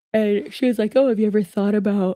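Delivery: talking through a yawn. Telling listeners what a woman from Cameo said, yawning while talking. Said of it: "sorry for yawning".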